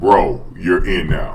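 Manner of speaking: very slow, careful, drawn-out reading aloud, word by word.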